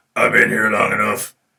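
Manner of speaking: loud put-on demon voice. Retelling a little boy in the hospital doing his demon voice: demon voice. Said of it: "I'm going to do my best demon voice now".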